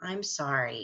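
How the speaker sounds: sincere, heartfelt, genuinely sorry tone. Showing a class how to apologize: sincere, really meaning it. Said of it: "say it like you really mean it".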